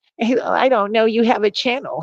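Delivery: put-on very high-pitched mocking voice.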